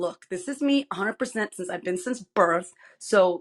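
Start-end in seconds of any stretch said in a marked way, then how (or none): none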